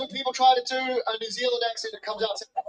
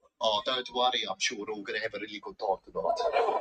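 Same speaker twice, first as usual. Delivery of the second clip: ominous, menacing, very low South African accent; 5 dB quieter than usual. Showing how a friendly phrase sounds threatening, in a menacing South African accent. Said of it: "The South African accent is one where whatever they say, it just sounds like something bad is about to happen".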